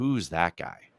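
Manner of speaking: very low, hushed whisper. Man retells his wife whispering to him as a man walks toward them: retelling a whisper. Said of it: "my wife kind of whispers to me".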